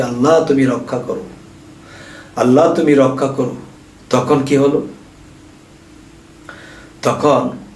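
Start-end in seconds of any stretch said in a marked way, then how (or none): none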